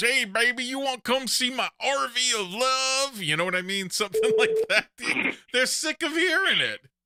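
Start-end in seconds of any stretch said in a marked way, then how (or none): 0.0-3.2 high, goofy yokel voice. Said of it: "goofy redneck that comes up and goes".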